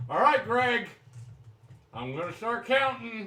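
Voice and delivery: yelling nervously. Twenty paces from Greg, about to start counting, nervous shouting. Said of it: "Why are you shouting?".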